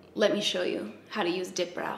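put-on soft, thick Romanian accent.

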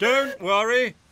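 very high, loud, boastful, proud hooting call. An engine answers the thin controller's call for speed; hooted proudly. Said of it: "Sir Handel hooted proudly".

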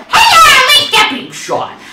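very high, loud, shouted, deliberately terrible character voice. Speaker trying out a character impression they call terrible, Spamton voice. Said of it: "do my Spamton voice".

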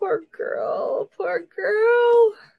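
very slow, high speech through laughter. Talking about the upset cat left behind, laughing while talking. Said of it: "I'm laughing".

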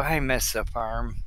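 muttered under breath. After petting the monkey, a man leans on the bulkhead to sleep, under his breath. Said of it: "under his breath".

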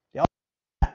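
whispered, unvoiced and quiet.

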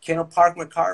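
put-on American-accented English. Showing how an American asks to park the car, American accent. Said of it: "quando o americano pede para estacionar o carro, ele fala assim".

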